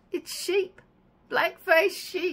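thrilled, high, drawn-out exclamation.

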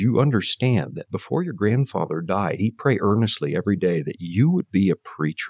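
plain

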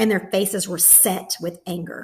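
ordinary delivery, nothing marked

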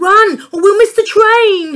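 frantic, urgent shout, very high and very loud. Dad, hurrying his family at the station as a whistle sounds: pleading urgently. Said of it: "Dad pleaded".

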